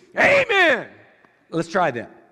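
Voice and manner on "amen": loud, very high congregation-style shout. Showing how to agree with something the preacher said: shouting Amen. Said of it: "Shout it out".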